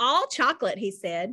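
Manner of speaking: ordinary delivery, nothing marked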